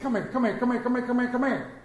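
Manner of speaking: fast tobacco auctioneer patter, rattled off. Acting out a parent calling their children, like a tobacco auctioneer. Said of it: "you sound like a tobacco auctioneer".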